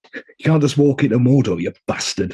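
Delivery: put-on authentic Yorkshire accent with proper Yorkshire vowels. Contractually obligated to do it and wanting it done properly, do a Sean Bean impression. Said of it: "Authentic accent".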